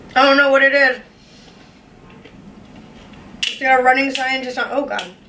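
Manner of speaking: speaking with food in mouth, chewing. Tasting an unknown drink on camera, the speaker is talking while chewing. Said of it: "I'm still chewing this one".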